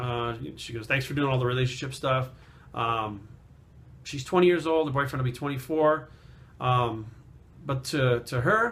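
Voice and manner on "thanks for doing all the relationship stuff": normal talking voice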